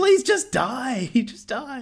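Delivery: high-pitched mock yelling. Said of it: "yelling at him to die".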